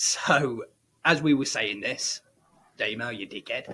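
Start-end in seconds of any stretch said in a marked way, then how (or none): 2.8-3.7 put-on Australian accent. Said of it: "We're not just doing the accent for a laugh".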